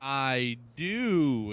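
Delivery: slowed-down speech. Asked by the host for a Netflix pick, answering: talking slowly. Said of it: "I am talking slowly".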